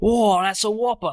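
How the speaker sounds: loud, thrilled, eager, excited Australian wildlife-presenter voice. Joking with fellow players after an earlier attempt, the speaker does Steve Irwin impression. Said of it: "Didn't sprinkle in any crikeys".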